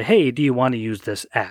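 usual speaking voice

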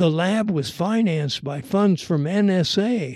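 ordinary delivery

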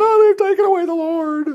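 mock tearful weeping, pitched way up. Retelling the tomb scene from scripture: imitating Mary crying. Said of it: "She was crying".

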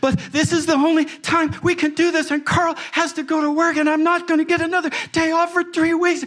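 put-on, shrill, very high bawling and sobbing. Retelling what a bride said while bawling, imitating someone sobbing. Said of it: "she is just bawling and beside herself".

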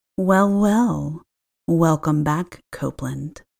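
put-on raspy old woman whispering. Reading a story aloud, voicing a woman whispering in the ear: raspy older woman's whisper. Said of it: "the raspy voice of an older woman whisper".

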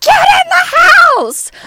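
loud high scream. Speaker recalls her mother screaming at her: retelling mother's scream. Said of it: "screamed at me. She's like".

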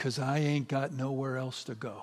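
mock-tearful delivery. Retelling a film scene, the speaker gives the character's answer, imitating someone weeping. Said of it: "his character starts to weep".

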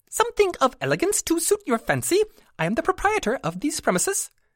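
tiny squeaky creature voice, very high pitch. Narrator reads a small creature addressing Sarah at a display case, high squeaky creature voice. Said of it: "The speaker's high voice squeaked".

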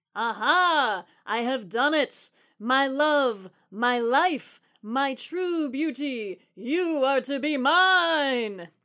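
very slow drawn-out cry, aha stretched long. The prince speaks over the gasping, clapping parents, crying out. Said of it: "The charming prince cried out".

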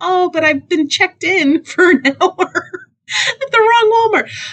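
laughing in embarrassment. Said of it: "I'm like".

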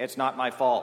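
loud put-on mechanical robotic voice, crying out. Recalling a computer the son programmed to protest wrong commands, in a loud mechanical computer voice. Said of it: "cry loudly in its mechanical voice".

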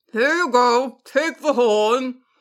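words mumbled through the teeth. A basilisk, holding a horn in its fangs, hands it to Jack; mumbling through teeth. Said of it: "It mumbled through its teeth".

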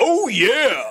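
loud, high-pitched bellowing. Asked to bring back an earlier impression, the speaker does it again: Kool-Aid Man impression. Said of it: "Can you just bring that back to life for a second?".

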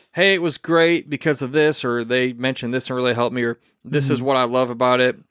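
normal talking voice

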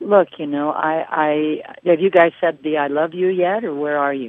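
ordinary talk, nothing marked

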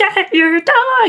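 very high-pitched, nervous yelling. Speaker describes yelling at their dogs when nervous, imitating own high-pitched yelling. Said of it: "I have a really high-pitched voice when I go into that that yelling phase".

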